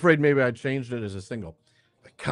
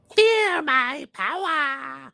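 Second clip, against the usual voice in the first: very high-pitched, squeaky goblin creature voice. Playing a game, the speaker gives a character a goblin voice. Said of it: "that choice for the uh, the goblin voice".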